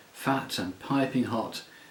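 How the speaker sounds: ordinary delivery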